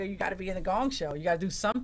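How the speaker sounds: usual speaking voice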